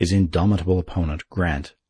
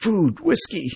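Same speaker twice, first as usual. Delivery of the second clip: very high gasps, words gasped out one by one. An exhausted man hands dispatches to the general and asks, gasped. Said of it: "he gasped".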